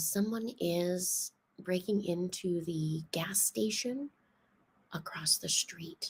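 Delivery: very quiet, very calm, composed, hushed voice. Retelling a call to nine one one at two in the morning, retelling speaking very calmly. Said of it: "very calmly".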